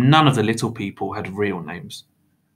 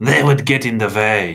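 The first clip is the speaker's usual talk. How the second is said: growling, objecting tone; 4 dB louder than usual. Reading one man's reply to another's offer of help, growled. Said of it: "Mr. Crepsley growled".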